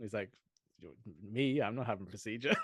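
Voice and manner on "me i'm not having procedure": put-on friendly fatherly voice. Retelling a favourite film scene: imitating Stanley Tucci, fatherly and friendly.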